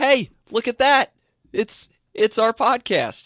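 high, slow, casual excited gush, not voiceover. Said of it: "I don't do it in my voiceover voice".

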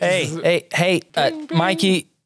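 high, drawn-out yell at the top of the lungs. Voicing a character calling out to Mikey: yelling at the top of his lungs. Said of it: "yelling at, like, the top of his lungs".

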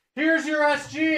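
loud off-mic call projecting across the room, rising. Pointing out a guitar while off the mic: talking loud off the mic. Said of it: "I have to talk loud 'cause I'm off the mic".

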